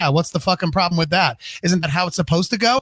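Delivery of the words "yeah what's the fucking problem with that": ordinary delivery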